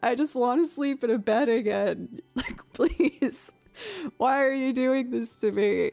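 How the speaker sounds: mock tearful, frustrated, pleading crying. Retelling a call about a late mattress delivery: retelling a tearful, frustrated plea. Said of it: "I was so frustrated and angry. Tears".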